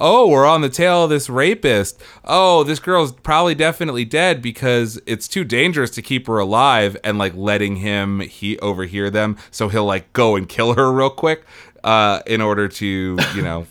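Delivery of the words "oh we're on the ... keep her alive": fake, staged chatter, slightly too loud. Retelling two detectives' staged chat for a listener: imitating a slightly too loud fake conversation. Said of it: "slightly too loud fake conversation".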